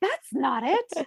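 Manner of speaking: high-pitched, slow, offended-sounding dog voice.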